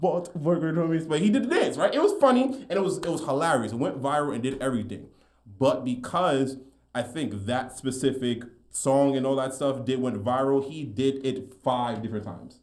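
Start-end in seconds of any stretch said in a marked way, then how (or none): 0.0-1.0 put-on Indian accent, laid on heavy, pitched up. Retelling a viral remix by an Indian creator: imitating a heavy Indian accent. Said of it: "the heavy accent or whatever too".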